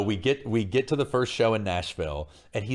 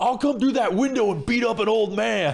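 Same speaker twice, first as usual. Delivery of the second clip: acted, very high-pitched hollering yell; 13 semitones higher, 4 dB louder than usual. Telling a story about a man yelling through a door, retelling a yell. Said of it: "he yells through the door".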